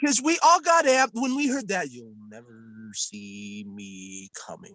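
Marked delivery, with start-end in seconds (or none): 1.9-4.7 very deep, very soft, deliberate, drawn-out delivery. Quoting a trailer line that got everyone excited: Mandarin voice. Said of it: "you sound like the fucking Mandarin".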